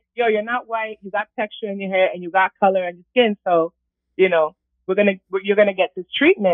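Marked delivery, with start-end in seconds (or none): none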